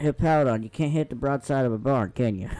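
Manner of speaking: cocky high-pitched taunt. Playing a Pokémon battle, talking smack to own Pokémon, smart-aleck taunting. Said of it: "I'm being a smart aleck".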